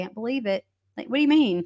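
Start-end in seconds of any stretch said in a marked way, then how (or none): 0.0-0.6 put-on breezy, unbothered, offhand tone. Retelling an interview answer about a mother's death: imitating a nonchalant tone. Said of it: "That's literally what he said".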